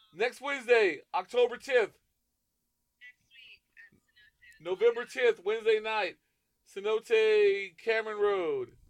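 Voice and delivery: shouting. Announcing upcoming show dates to listeners: yelling. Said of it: "why are you yelling?".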